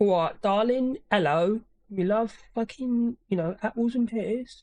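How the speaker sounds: put-on old-school East London Cockney accent. Speaker demonstrates the old london accent that has been replaced: old cockney accent. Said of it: "the Cockney accent".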